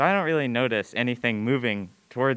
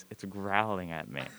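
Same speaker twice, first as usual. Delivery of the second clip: really quiet, low, hushed, barely-there murmur; 4 semitones lower, 8 dB quieter than usual. Retelling a moment, the speaker answers a confused man about a growling animal; really quiet voice. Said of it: "in a really quiet voice".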